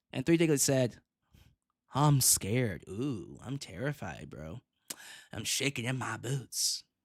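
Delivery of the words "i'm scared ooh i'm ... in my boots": play-acted, slow, drawn-out sarcastic terror. Answering a viewer's comment about being scared: sarcastic mock fear. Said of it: "The sarcasm".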